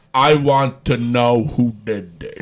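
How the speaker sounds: deep, mechanical, very low robot voice. Recapping a wrestling segment, Big Cass finds Enzo Amore laid out backstage: Big Cass robotic voice. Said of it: "talking in his robotic voice".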